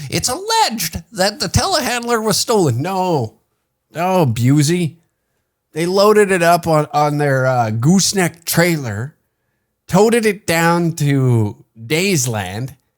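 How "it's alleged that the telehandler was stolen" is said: squeaky, very high newscaster cadence. Mocking a local news report to a co-host, news reporter voice. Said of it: "reporter voice is so funny".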